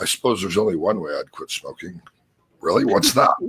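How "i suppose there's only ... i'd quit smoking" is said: muttered under breath, quieter. Recounting what a smoker said after a long pre-talk: retold mutter under breath. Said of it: "under her breath".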